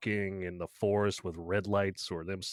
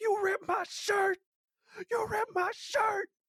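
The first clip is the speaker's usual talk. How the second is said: shrieking scream, pitched very high. Retelling a movie scene where a man screams mid-fight: imitating a screaming man. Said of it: "And he's just screaming".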